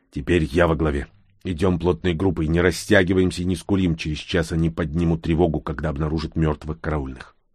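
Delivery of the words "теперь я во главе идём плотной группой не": plain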